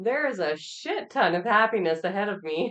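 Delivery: high, loud, speaking through hard laughter. Reading an affirmation card aloud, laughing hard while talking. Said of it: "Laughing so hard, I'm choking".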